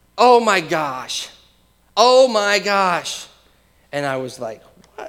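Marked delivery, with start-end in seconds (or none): 0.2-3.3 put-on loud, very slow, stretched-out scream. Retelling a walk three blocks from home when she suddenly screams, imitating her scream. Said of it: "she just screams".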